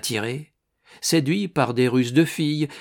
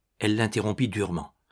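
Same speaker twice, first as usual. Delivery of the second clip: plain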